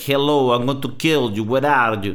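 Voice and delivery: English with a rough put-on Russian accent. Showing how Russians sound speaking English: imitating Russian accent in English. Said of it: "the English Russian accent".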